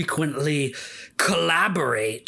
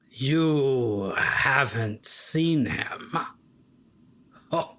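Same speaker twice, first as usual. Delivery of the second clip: menacing voice. Voicing a vampire told a friend is missing: evil voice as Vinny. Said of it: "That was a really evil".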